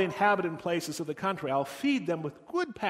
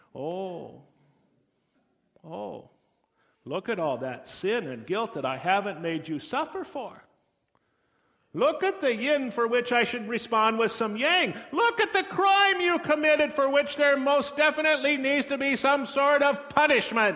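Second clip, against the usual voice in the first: put-on Minnesota accent, pitched up; 7 semitones higher, 4 dB louder than usual. Imagining God paging through our files, speaking as God with a Minnesota accent. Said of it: "because he has a Minnesota accent".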